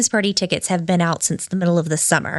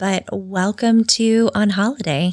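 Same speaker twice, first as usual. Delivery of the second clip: late-night radio DJ voice. A podcast host opens the show in a Delilah radio voice. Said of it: "Delilah voice".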